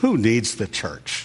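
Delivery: slightly sarcastic tone. Repeating the question a third time, with a slightly sarcastic tone. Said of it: "I say it with just a little bit of a sarcastic tone".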